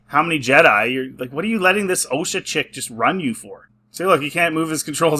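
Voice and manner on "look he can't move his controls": ordinary talk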